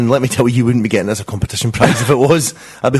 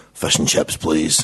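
deep, gravelly, horribly menacing, sinister voice; 7 semitones lower, 5 dB quieter than usual. Act out Mark ordering at his local fish and chip shop, in Mark's gravelly, deep, sinister voice. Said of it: "that gravelly, deep, horrible, sinister voice of his said".

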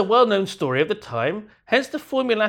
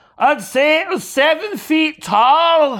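put-on Scottish accent, pitched up and loud; 6 semitones higher, 6 dB louder than usual. Telling a joke, voicing the one answering questions: Scottish accent. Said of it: "they were Scottish".

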